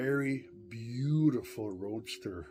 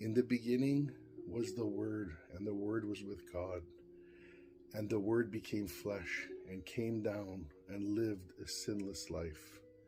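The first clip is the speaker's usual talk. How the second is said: ordinary talk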